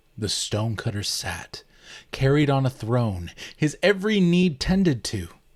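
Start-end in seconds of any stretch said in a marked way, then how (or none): none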